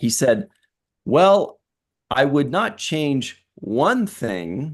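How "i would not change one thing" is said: heavy emphasis landing on the word one. Quoting what he said about changing the show, stress on one. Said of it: "The emphasis was on one".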